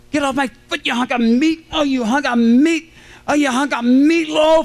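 high-pitched, put-on screaming coach voice. Retelling how a football coach screamed after a foot was stepped on: imitating a coach screaming. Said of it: "he's screaming".

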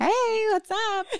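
high, slow, breezy tone. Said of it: "She's like".

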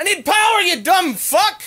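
shouting. Told not to yell, then yelling again at the other person: shouting. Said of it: "Use your inside voice".

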